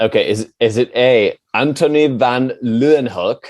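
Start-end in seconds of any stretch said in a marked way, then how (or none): 1.5-3.4 name pronounced with put-on Dutch accent. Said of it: "you have to do 'em in the accent".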